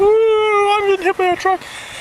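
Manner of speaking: very high, loud mocking squeal.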